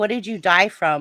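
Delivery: normal talking voice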